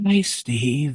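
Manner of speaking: hushed, half-whispered but voiced stage whisper. Retelling what an entity said into the ear: imitating a half-whisper. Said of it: "In a kind of a whisper".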